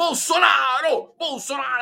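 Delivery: emphatic, somewhat violent, high forceful shout with conviction. Recalling how Collor once shouted Bolsonaro's name: imitating Collor's convinced shout. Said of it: "ele gritou com convicção".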